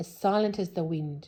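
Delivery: plain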